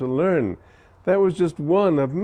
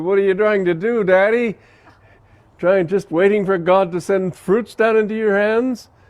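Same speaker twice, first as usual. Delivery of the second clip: acted, derisive, scornful jeer full of scoffing; 4 semitones higher, 3 dB louder than usual. Retelling a story where a man scoffs at a saint: imitating a scoffing tone. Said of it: "scoffingly said".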